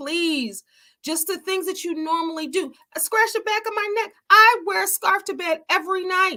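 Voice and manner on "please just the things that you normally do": crying out, tearful, desperate and pleading. Retelling a prayer to god for healing: retelling own crying, screamed plea. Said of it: "I was screaming out to God and I was crying out to God".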